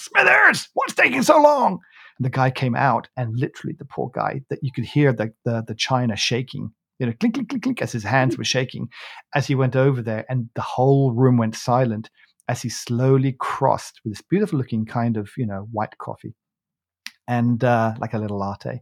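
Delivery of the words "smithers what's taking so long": high, loud impatient shout. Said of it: "he sort of shouted in there".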